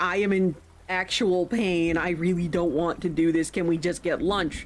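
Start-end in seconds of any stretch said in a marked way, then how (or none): none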